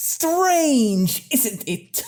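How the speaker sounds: very high, nasal voice through clenched teeth. Quoting a man's line from a film, through gritted nasally teeth. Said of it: "deliver that with through gritted nasally teeth".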